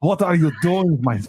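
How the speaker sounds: put-on Russian accent. Redoing the quote after being asked for Russian: put-on Russian accent. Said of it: "Do it in Russian".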